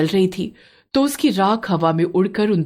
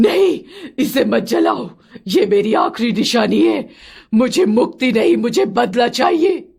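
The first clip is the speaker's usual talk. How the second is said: tormented, desperate ghostly crying out; 4 semitones higher than usual. As the anklet is about to be burned, the dancer's ghost bursts out; ghost screaming. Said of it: "गांव वाले कहते थे कि 50 साल पहले एक नर्तकी को यहाँ जिंदा जला दिया गया था। / छत पर एक औरत उल्टी चिपकी हुई थी और उसकी आंखें कोयले की तरह काली थीं। / छत पर एक औरत उल्टी चिपकी हुई थी और उसकी आंखें कोयले क".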